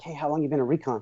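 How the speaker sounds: put-on whisper. Retelling what the prior enlisted guy leaned over and said: imitating a whisper.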